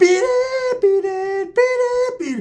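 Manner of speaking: very high, squeaky voice. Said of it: "he's like [name]".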